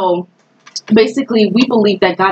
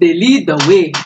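Haitian-accented voice. Speaker repeats their own last remark, now in a Haitian accent. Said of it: "in the Haitian voice".

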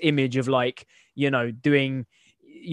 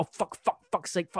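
mock frantic, panicked, breathy whisper under the breath; 4 semitones higher, 7 dB quieter than usual. Retelling own swearing after a wrong order: imitating own panicked swearing. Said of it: "I'd be, like, panicking".

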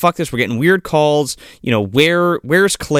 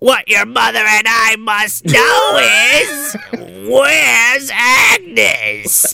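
put-on bone-chilling voice, higher; 6 semitones higher than usual. Retelling the first time the caller speaks in the film: Billy impression. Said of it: "Your impression is, is both excellent".

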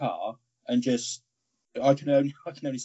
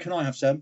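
put-on slurred, tipsy, drunken words smeared together. Retelling a drunk friend's request for dessert: imitating drunken slurred speech. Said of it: "Sort of slurring his words".

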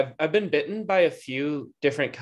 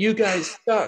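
put-on drunk man yelling, higher; 7 semitones higher than usual. Retelling how a drunk man yelled at a group: imitating a drunk man yelling. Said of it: "this drunk guy started yelling at us".

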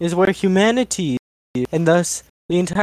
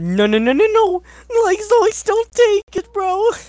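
cartoon dog voice, much higher, louder; 3 dB louder than usual. Speaker playing along with a narrator, slipping into a Scooby-Doo voice. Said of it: "I went to the Scooby voice a bit".

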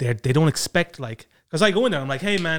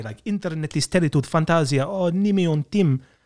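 attempted foreign accent, Estonian. Showing the memorized phrase for picking up a pizza order, attempting the accent. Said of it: "I try to do the accent".

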